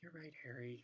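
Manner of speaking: small, subdued, soft voice. Narrator reading Hermione's reply to Harry, in a small voice. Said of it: "said Hermione in a small voice".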